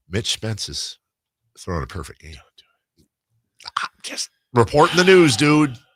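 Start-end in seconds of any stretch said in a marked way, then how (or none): 0.1-2.3 hushed, quiet, lowered voice. Reporting a perfect game in progress: quieter voice. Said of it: "I'm going to say it quieter".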